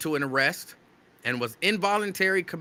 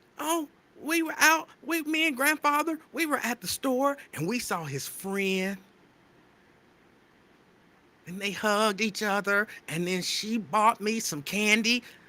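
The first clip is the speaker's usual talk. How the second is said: put-on little child voice, higher; 5 semitones higher than usual. Retelling what a little child keeps saying: imitating a little child. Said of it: "why would you say that like that?".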